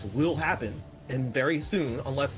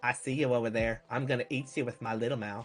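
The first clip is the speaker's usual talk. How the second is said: put-on little alien cartoon voice; 4 semitones lower, 3 dB quieter than usual. Recalling a voice from a cartoon show: Family Guy little alien voice. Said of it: "the little alien's like".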